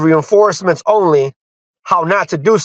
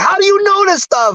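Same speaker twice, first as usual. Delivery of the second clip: mock shrill, furious scream, very high; 14 semitones higher than usual. Retelling a man's reaction in a Messenger message: imitating an angry scream. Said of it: "he's like mad, mad, screaming like".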